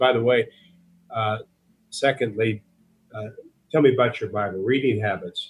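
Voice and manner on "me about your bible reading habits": ordinary talk, nothing marked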